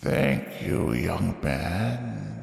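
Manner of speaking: very soft hushed whisper, one word drawn out. Game master voicing an unseen voice behind a fleeing character, whisper. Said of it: "you hear a voice whisper behind you".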